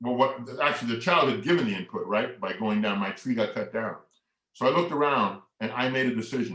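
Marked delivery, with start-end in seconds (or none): none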